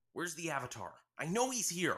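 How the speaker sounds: frantic, determined, high yell. Barging into the water temple, Sokka demands the Avatar, frantic and determined. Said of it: "[name] barged into the water temple, frantic and determined".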